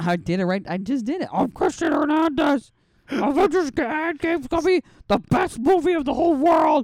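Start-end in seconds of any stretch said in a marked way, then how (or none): 1.3-6.9 very high, shrill, loud, squeaky put-on voice.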